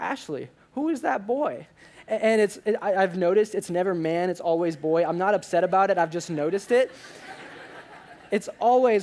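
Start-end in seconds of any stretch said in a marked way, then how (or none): 0.0-1.7 put-on high-pitched old grandma voice. Retelling what Joyce says when the speaker walks in, in Joyce's total grandma voice. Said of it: "in the total grandma voice".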